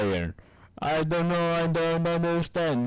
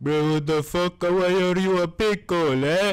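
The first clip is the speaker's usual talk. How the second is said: put-on Indian accent throughout; 3 semitones higher, 4 dB louder than usual. Acting out Brian reacting to someone turned into a pickle, Brian voice in Indian accent. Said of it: "why is Brian Indian?".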